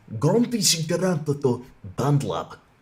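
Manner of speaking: put-on Slavic accent. Repeating how a man said a word, the speaker mimics him: imitating a Slavic accent. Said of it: "it has like the Slavic accent. He says".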